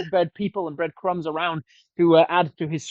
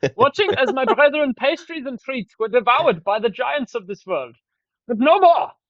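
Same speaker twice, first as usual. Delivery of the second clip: bad put-on Finnish accent, higher; 7 semitones higher than usual. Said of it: "I'm from Finland".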